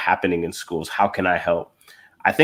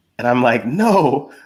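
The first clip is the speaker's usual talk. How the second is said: ordinary talk, nothing marked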